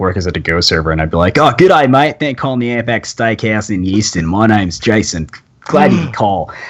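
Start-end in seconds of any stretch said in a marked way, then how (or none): 1.4-6.5 campy, hokey, generic fake Australian accent. Retelling answering the restaurant phone at work: campy generic Australian accent. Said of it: "generic Australian accent".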